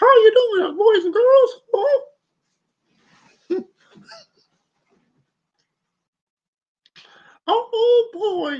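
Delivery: pitch way up into a cartoon squeak. Greeting viewers while the character appears on screen: Mickey Mouse voice. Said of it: "getting my Mickey voice".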